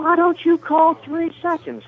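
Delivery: mock very high, shrill yell. Retelling how a fan at courtside kept yelling: imitating a woman yelling. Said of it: "she's yelling again".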